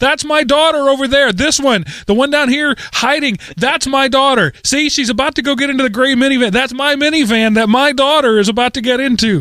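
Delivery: mock very high, shrill screaming. Retelling standing in a parking lot pointing at a hiding daughter: imitating himself screaming. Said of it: "standing in the parking lot screaming at her".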